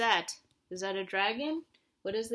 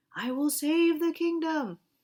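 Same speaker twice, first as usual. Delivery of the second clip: loud, pitched-up storybook lion voice; 6 semitones higher, 5 dB louder than usual. Asking a listener to match voices to who's talking, showing it in a lion voice. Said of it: "How do you think the lion says".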